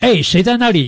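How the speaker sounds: loud high-pitched shouting.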